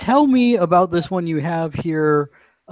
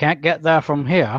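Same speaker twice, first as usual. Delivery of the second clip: put-on New England accent. Teasing the other speaker for not using the correct accent, in a new england accent. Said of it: "you weren't saying it with the correct New England accent".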